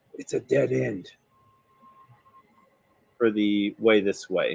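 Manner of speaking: very quiet, hushed voice. Voicing Tor as he speaks back to the group, in a very quiet voice. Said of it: "he says back to the group in very quiet voice".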